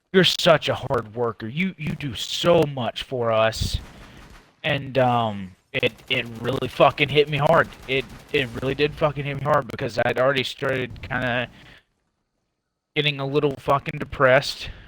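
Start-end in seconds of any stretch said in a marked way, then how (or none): 0.1-3.8 mock, heavy, laid-on-thick, dripping sarcastic tone. Retelling what a man said to them, in the most sarcastic voice. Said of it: "in the most sarcastic voice that you could fucking think of".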